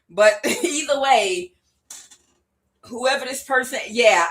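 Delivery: holding back a laugh. Describing a person who claims witchcraft powers, holding back a laugh. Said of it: "I'm trying not to laugh".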